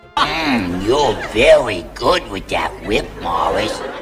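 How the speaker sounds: rasping monster voice. Retelling a scene where Thog reacts to whip cracks; scratchy Thog voice. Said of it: "in his scratchy Jerry Nelson voice".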